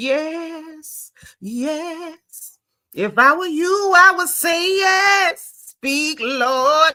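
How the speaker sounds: mock high, very slow, eager, excited, "yes" drawn out. Retelling cheering while watching the episode: retelling own excited cheering. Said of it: "I was getting excited".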